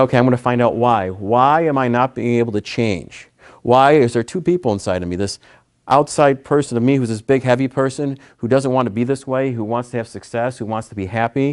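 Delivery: plain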